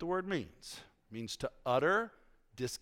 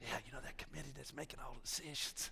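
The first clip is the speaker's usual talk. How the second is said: hushed low murmur, small voice, quieter; 12 dB quieter than usual. Showing how someone murmurs complaints to Brother Mike: murmuring in a small low voice. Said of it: "speaking in a low voice so only certain people hear".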